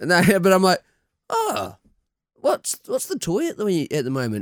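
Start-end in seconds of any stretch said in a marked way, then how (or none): 1.3-4.4 put-on New Zealand accent, higher, quieter. Parent acting out their own words in a story, put-on Kiwi accent. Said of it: "I use my Kiwi accent".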